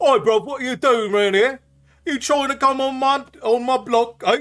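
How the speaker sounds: put-on very high, loud, muddled and botched Cockney accent. Voicing the dragons, the speaker tries an accent that becomes a messy Cockney-ish put-on accent. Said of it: "Make it just a Cockney mess".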